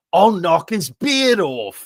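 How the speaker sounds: mock Scottish child accent. Retelling a viral video, imitating a Scottish kid's angry reply. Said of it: "it's funny that you did that voice".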